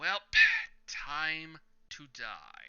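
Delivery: slow, drawn-out, menacing villain voice.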